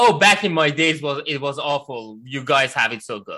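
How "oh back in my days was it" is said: usual speaking voice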